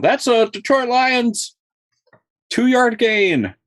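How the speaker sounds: very high, stretched stadium announcer call. Joking about the stadium replacing the roar: imitating stadium announcer. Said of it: "the announcer guy that's".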